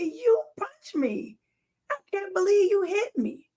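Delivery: mock crying, high swooping tearful scream. Retelling being punched in the eye: retelling crying and screaming. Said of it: "I cried and I screamed and I said".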